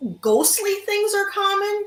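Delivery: solemn worker voice.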